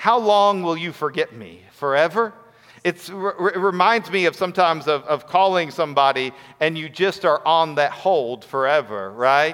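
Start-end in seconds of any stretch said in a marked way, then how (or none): 0.0-2.3 dry, needling, mocking sarcasm. Rereading a psalm line to show its tone: sarcastic. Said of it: "do you hear the sarcasm in the psalmist".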